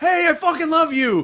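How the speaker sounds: hollering from a distance. Retelling a stranger shouting from across the street: imitating someone shouting. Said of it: "this guy shouted at me from across the street".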